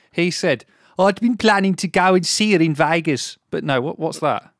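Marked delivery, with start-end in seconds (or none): 1.0-3.4 put-on Brummie accent. Reading out what a man said, asked to do it in a brummie accent. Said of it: "You can get away with a Brummie accent".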